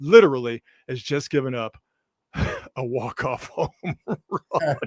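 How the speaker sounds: speech broken up by laughter. Reporting a walk-off home run against the Giants, laughing while talking. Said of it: "I'm sorry for laughing".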